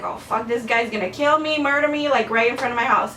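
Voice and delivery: ordinary talk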